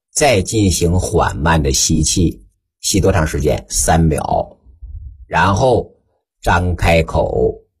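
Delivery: low, slow, unhurried voice.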